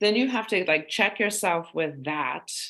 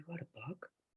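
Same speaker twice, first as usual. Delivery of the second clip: soft, unvoiced whisper, sounding disbelieving. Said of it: "unvoiced whisper".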